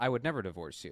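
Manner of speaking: usual speaking voice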